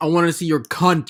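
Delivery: put-on man's voice. Acting out what a guy says in a message: imitating a guy's crude line. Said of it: "the guy's like".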